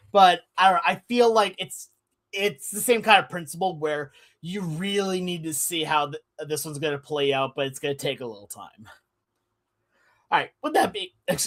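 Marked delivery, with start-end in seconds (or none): 10.3-11.4 cracking voice, breaking and jumping high mid-phrase. Moving on to the next topic, voice cracking. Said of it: "my voice is completely cracked there".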